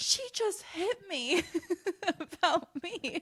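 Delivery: put-on high, slow, slurring drunk voice, accusing tone.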